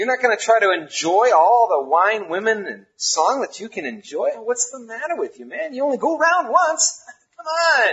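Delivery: mocking, worldly, skeptical voice.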